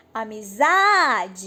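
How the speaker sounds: amizade called out, stress on za. Finding the stressed syllable by calling the word, amizade with stress on za. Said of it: "Vamos chegar no portão e chamar a palavra amizade".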